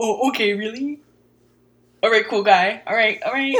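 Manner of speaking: very loud, scornful, sarcastic, mocking tone. Showing how one mocks a partner in an argument: imitating mocking a partner. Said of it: "I'm the mocking them".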